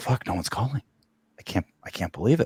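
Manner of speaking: hushed, very quiet, desperate muttering. Speaker imagines Peters's reaction, imitating Peters sounding desperate. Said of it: "you can hear that in his voice".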